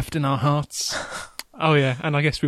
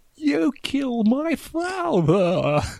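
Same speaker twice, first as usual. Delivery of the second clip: put-on high, swooping elderly voice; 10 semitones higher than usual. Speaker quotes a film character's one line, imitating an old man's voice. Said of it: "to speak like an 80-year-old man".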